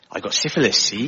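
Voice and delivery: low, sunny, cheerful put-on West Country accent. Showing how a word sounds in the West Country, in a West Country accent. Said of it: "but in the West Country".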